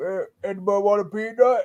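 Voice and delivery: low, deep voice of a huge giant. Guessing how an actor would sound as the giant: Andre the Giant voice. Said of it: "His voice would probably sound like Andre the Giant".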